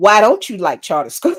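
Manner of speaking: mock-annoyed, acted irritated tone. Recounting someone's reply after she said she opposes charter schools, retelling an irritated question. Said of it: "sister girl was immediately pissed".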